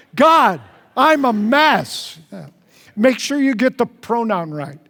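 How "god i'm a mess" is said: very slow, loud, swooping, enthusiastic, sincere delivery. Leading a group in saying a prayer aloud together, with enthusiasm. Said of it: "let's say it with enthusiasm".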